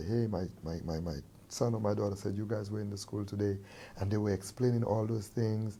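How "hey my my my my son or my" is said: usual speaking voice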